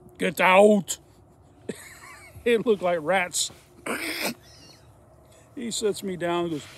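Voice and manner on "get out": very loud, big-voiced booming shout. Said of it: "He steps in and goes".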